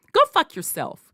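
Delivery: comfortable, calm, polite, respectful tone. Showing how to tell someone off: calm and polite. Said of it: "comfortably and respectfully".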